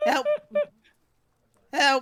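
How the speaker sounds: tiny lizard voice, very high and very loud. Voicing a lizard stuck with its tail against the wall, little lizard voice. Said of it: "Saying to no one in particular in his little lizard voice".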